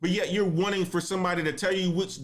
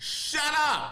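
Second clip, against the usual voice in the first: put-on fed-up, high, scolding grandmother voice; 9 semitones higher than usual. Scolding people's excuses, the speaker says it the way grandma used to. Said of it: "I'm going to say it like my grandma says it".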